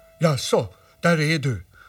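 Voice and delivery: loud, drawn-out calling out. A toy bear greets a boy who has just come back to the tree: calling out. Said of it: "ropade Nalle Puh".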